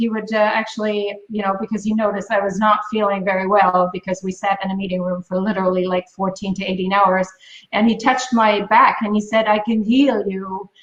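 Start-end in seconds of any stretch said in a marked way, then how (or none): 9.5-10.6 put-on very sexy, sultry French accent. Retelling what a man said while touching the speaker's back, sexy french accent. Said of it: "in his very sexy French accent".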